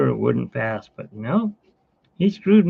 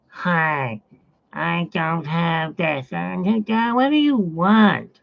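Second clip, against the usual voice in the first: put-on surly, rude woman's voice, very slow; 4 semitones higher than usual. Retelling a medication drop-off, voicing the woman who answers the door, imitating a rude woman. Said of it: "I did that voice to the boss".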